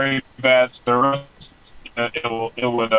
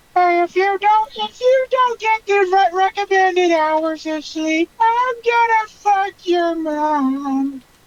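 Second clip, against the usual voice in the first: put-on cartoon kid voice, higher. Trying out a cartoon character's voice for the others: Carl Wheezer voice. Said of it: "I don't know if I can do the Carl Weezer voice".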